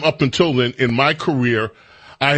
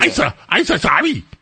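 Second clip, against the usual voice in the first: put-on silly alien voice, higher pitched; 7 semitones higher than usual. Complaining about a film character, imitating Jar Jar Binks voice. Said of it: "some Jar Jar stupid Binks".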